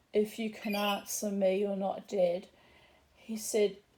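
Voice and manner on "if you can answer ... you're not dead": plain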